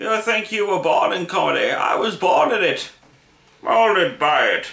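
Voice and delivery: put-on high old man voice. Mid-discussion about comedy, delivering a quoted line in Bane voice. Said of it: "My old man voice sounds suspiciously like Bane".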